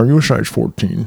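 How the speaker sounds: tight-lipped put-on voice. Discussing Ted Levine's voice in Silence of the Lambs, Buffalo Bill voice, barely moving mouth. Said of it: "He doesn't move his mouth very much".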